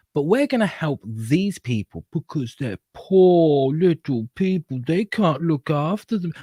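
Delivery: high, patronizing, condescending tone. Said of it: "They're being patronizing to them".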